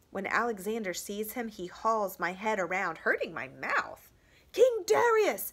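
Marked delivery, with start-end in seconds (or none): 4.5-5.5 piercing, very high, shrill battle cry. Reading a battle story, voicing a rider spotting the enemy king: shrill yell. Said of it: "he yells in his shrill voice".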